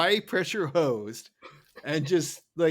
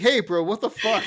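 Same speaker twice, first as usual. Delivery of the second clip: furious, indignant, loud, high angry outburst; 5 semitones higher, 5 dB louder than usual. Retelling a cartoon scene where Roger pops up: angry Roger voice. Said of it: "a very angry Roger appearing".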